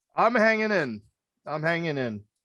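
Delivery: indistinct, muffled speech. A guest answers the host's greeting while his implant settles, muffled speech. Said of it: "Implant is uh, settling, so apologies on the uh, mispronunciations or muffled sounding words".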